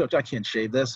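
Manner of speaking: ordinary delivery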